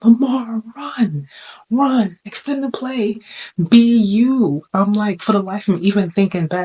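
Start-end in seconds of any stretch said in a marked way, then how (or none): 0.0-4.6 play-acted very slow, urging, high, drawn-out scream. Retelling watching a playoff game as a fan: imitating screaming at the tv. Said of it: "literally screaming at the T V".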